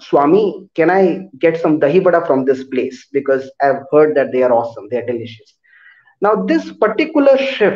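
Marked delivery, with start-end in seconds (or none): none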